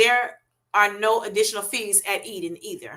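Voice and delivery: normal talking voice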